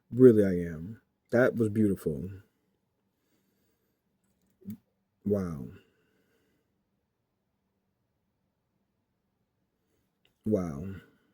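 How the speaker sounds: low, hushed, barely holding back tears. After reading a touching message aloud, the speaker reacts: fighting back tears. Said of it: "I'm fighting back the tears".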